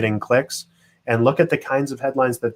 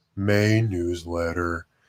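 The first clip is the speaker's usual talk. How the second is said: mopey character voice, lower and quieter; 5 semitones lower, 5 dB quieter than usual. Speaker contrasting dull and strong newsletter titles, saying the dull one in an Eeyore voice. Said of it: "I love how you said that like Eeyore".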